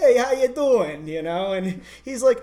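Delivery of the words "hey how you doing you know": put-on East Coast Italian-American accent, higher, louder. Retelling how Sam came up and greeted the speaker, in Sam's East Coast Italian accent. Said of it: "He almost like East Coast Italian".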